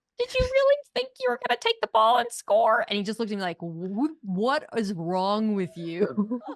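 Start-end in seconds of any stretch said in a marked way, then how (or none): 0.2-2.8 very high, fast, bouncy sing-song dog voice. Retelling asking a guest a question at the end of the show, very high-pitched dog voice. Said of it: "a very high pitched dog voice".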